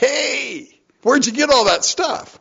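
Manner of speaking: eager, excited, very high voice with drawn-out hey. Acting out Naomi suddenly getting excited again, as excited Naomi. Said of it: "Have you heard the tone of her voice change?".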